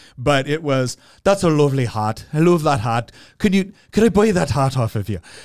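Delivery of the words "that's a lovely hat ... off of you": bad, clumsy, horrible fake Irish accent. Retelling what a lady in a pub in ireland said, in a horrible irish accent. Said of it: "forgive my horrible accent here".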